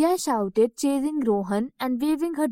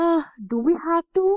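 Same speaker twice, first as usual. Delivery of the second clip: yawning, higher pitch; 5 semitones higher than usual. Rohan, reminded by Rhea to tidy up before the story, yawning. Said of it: "Rohan yawned".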